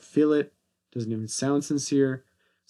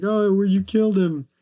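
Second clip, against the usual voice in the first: put-on high, loud, tearful child's sobbing wail; 8 semitones higher, 6 dB louder than usual. Retelling a movie scene where a kid in the audience cries: imitating a crying kid.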